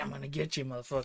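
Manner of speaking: self-assured, swaggering, cocky confident robot voice. Retelling a movie scene, voicing the robot: imitating a confident robot. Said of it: "turned around so confidently".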